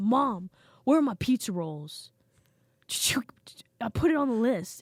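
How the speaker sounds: loud, mad, dead-serious, angry delivery. Retelling how a grown man living at home confronted his mom, imitating someone angry. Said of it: "He was so mad".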